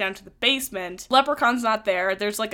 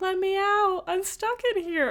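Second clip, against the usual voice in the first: put-on very high-pitched small child's, little girl's voice; 10 semitones higher, 4 dB quieter than usual. Retelling a scene where a creature lures someone from a crate: imitating a child's voice. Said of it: "mimicking a child's voice".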